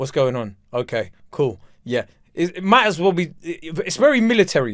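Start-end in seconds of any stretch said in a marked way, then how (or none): 0.0-2.0 put-on unfriendly voice, lower and quieter. Complaining that Marcus sounds like he doesn't like them, imitating Marcus sounding unfriendly. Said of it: "doesn't even sound like he actually likes me".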